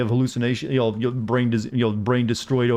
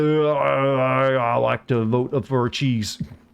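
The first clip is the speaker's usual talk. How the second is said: very slow, thick, dopey Texan drawl. Streamer asking chat how to voice stupid people, demoing a go-to stupid-person voice. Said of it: "my go-to is like".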